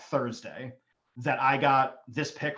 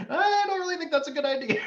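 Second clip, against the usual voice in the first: very high-pitched, fretful, worried mum voice. Retelling how a mother reacted to a risky career move, imitating her anxious tone. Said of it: "you just hear the anxiety".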